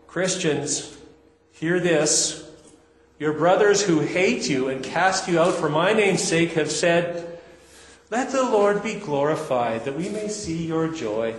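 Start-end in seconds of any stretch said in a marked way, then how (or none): 8.0-11.3 sarcastic delivery. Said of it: "you've got to read the sarcasm there".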